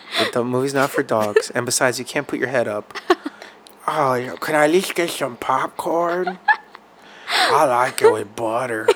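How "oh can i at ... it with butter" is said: pet dog voice, drawn out and slow. Voicing their dog in a pretend chat with its mama; Night Obi dog voice. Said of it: "I like the voice that you give Night Obi".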